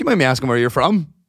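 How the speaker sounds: usual speaking voice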